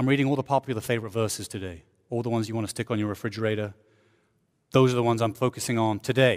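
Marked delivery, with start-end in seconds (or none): 0.0-3.7 dry, softer sarcastic delivery.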